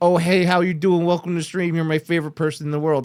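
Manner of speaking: fake, put-on friendly, cheerful shop-counter voice. Mocking what stream viewers want to hear: put-on customer-service friendliness. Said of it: "they want that customer service".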